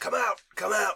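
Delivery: rough, not-quite-human voice. Game master voices an unknown figure calling to the players, very gruff inhuman voice. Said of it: "Doesn't sound like a human, but it's going".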